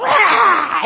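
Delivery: loud, high lion roar, growled "rah". Acting out a wife's reaction to a simple question: mock lion roar. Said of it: "like this lion".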